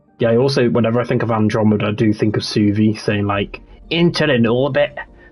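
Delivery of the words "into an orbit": bad, put-on Scottish accent. Recalling a game character's line while discussing Andromeda: bad Scottish-accent Suvi impression. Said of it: "That was a really bad Scottish accent".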